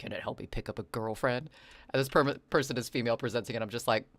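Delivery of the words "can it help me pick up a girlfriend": imitated mutter under breath, quieter. Retelling a person's aside after hearing instructions read aloud: imitating a mutter under breath. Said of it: "And under their breath".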